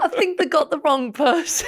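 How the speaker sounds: high, mock awkward delivery, laughing it out.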